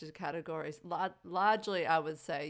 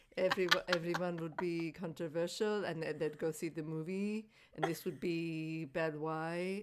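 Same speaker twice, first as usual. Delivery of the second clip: put-on accent accidentally slipping into a French sound; 3 dB quieter than usual. Urged to do a man's accent, the speaker tries it: accidental French accent. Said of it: "Now I sound French".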